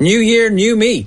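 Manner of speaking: loud drawn-out proclamation voice. A host introduces a contestant, retelling his office announcement as a loud announcement. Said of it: "announced at the top of his voice".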